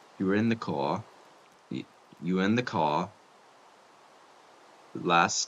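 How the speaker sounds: failed, bad New York accent. Speaker tries to imitate a woman's line, in a bad New York accent. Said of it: "I can't do a New York accent".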